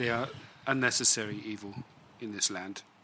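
soft half-whisper with no voice at all. Voicing a character who speaks as another walks away: half-whispering. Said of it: "kind of whispers as she walks away".

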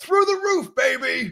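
very high, long-held, drawn-out whoop. Retelling how a man in a workout video answered: imitating a man yelling. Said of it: "And the guy just yells".

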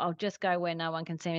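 ordinary talk

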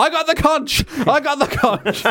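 mock high-pitched, impassioned yell. Narrating a story where a character tries to break up the tension, retelling a yell. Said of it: "He yells".

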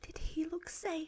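very soft, high, slow, drawn-out whisper. Retelling how everyone asked on getting back in: imitating a whisper. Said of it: "whispered to me".

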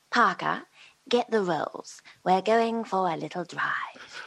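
put-on lady character voice. Describing how the character sounds in the new production, Lady Penelope voice. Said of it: "she's more kind of like".

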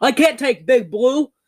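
put-on heavy New Jersey accent, laid on thick, drawn out. Retelling a movie scene, quoting the heroine's line: thick Jersey accent as Heigl. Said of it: "in the thickest Jersey accent".

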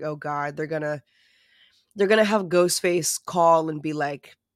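ordinary talk

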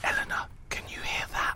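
unvoiced, hushed whisper under the breath.

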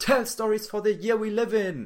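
very shrill, full-lunged, loud, very high scream. Recalling a line heard in the head: imitating Gary Vaynerchuk screaming. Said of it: "screaming at the top of his lungs".

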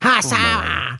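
very high, nasal, through-the-nose mum voice. Imitating mum talking to her phone in the car: imitating mum, nasal voice. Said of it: "she sounds exactly like this".

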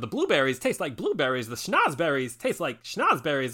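swooping, sing-song voice with wide pitch swings. Retelling a friend's impression: Christopher Walken as Wonka. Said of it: "he does an impression of Walken as Wonka".

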